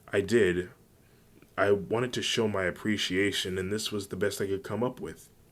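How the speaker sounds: ordinary delivery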